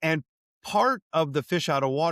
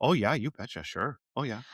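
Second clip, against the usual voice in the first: Minnesotan way of talking; 3 semitones lower, 4 dB quieter than usual. Describing picking up accents from others, slipping into a Minnesota accent. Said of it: "Minnesota accent does that to me".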